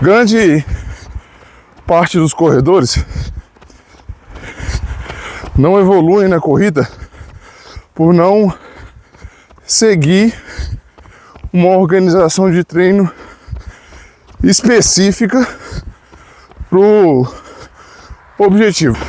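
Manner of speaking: slightly breathless. Recording a running lesson while climbing a steep hill in Gramado, slightly out of breath. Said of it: "tô um pouco ofegante".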